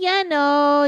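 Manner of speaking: Canadian-sounding voice. In conversation, the speaker catches themselves sounding very Canadian. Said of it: "the most Canadian I've ever sounded".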